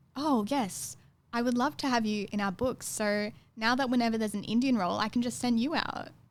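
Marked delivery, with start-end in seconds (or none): none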